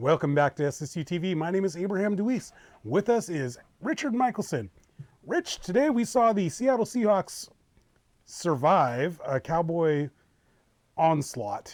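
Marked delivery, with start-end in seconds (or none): 5.3-11.7 strongly sarcastic newscaster-style delivery, laid on thick. Opening a game recap to a co-host: heavy sarcasm. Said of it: "heavy sarcasm".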